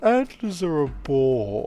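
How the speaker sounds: deliberately bad, over-the-top, loud, swooping foppish drawl. Reading a story aloud, exaggerated foppish character voice. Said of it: "a really bad Astarian uh, voice... an absolute foppish voice".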